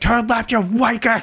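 very high, barking yell. Describing a navigation voice replaced by Gordon Ramsay's, yelling like Gordon Ramsay. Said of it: "Gordon Ramsay's just yelling like".

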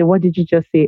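ordinary talk, nothing marked

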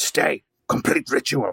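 rough, gruff monster speech. A game master voices a figure the players hear from their position, in a gruff voice. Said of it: "the gruff voice".

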